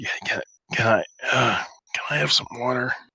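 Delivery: rasping, gravelly, groggy just-woken voice. Voicing a groggy man just brought to consciousness: gravelly just-woken-up voice. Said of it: "he asks in a kind of gravelly, just a, just voice".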